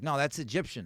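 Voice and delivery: ordinary talk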